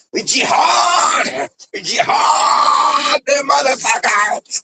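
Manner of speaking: acted very high, drawn-out, wild unhinged outburst. Retelling how a woman threatened in a video: imitating someone going crazy. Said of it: "Going crazy".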